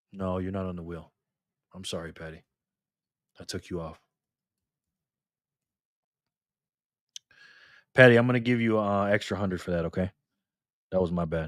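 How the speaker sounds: voice sinking right down, low and apologetic. Apologizing to a player for taking her off the wheel, voice getting low. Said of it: "You see how my voice is getting all low?".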